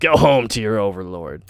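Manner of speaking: booming, full-throated bellowed shout. A voice calls out to the intruders from behind the trees, bellowing. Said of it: "A voice bellows".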